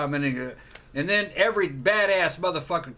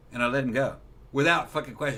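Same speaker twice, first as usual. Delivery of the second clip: normal talking voice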